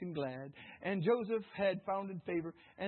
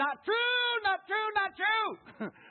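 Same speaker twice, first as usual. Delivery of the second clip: very high-pitched, loud, squeaky character voice; 7 dB louder than usual. Telling a room about Joseph going to jail, doing a Gomer Pyle impression. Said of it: "Gomer Pyle said it like this".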